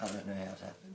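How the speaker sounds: voice nearly gone. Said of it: "I'm having trouble with my voice".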